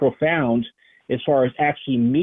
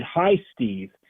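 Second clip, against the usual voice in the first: soft, hushed, half-whispered stage whisper; 4 dB quieter than usual. Retelling what an entity said in the ear: imitating a half-whisper. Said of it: "but in a whisper".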